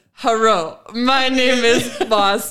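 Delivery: put-on thick Japanese accent. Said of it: "didn't have a thick enough Japanese accent".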